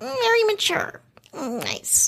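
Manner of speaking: very high, swooping, drawn-out, pissed-off kitty voice. Imitating a woman praising a man, like a pissed off kitty. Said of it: "That's my Megan impression".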